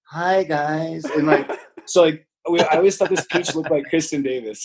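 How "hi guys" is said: very slow, drawn-out delivery of every word. Imitating how someone always greeted people: Kristen Davis impression. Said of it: "pretty strong, uh, Kristen Davis impression".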